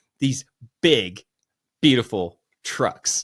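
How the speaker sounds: emphatic, heavy stress on the word trucks. Repeating a Trump quote for Paul with emphasis: Donald Trump impression stressing trucks. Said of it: "Let me do that one more time for you".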